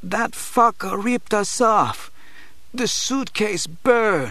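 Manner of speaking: very high mumbling, words mangled as through a mashed jaw. Narrator reads the injured Crip's line, mumbling through a mashed jaw. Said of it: "mumbles through a mashed jaw".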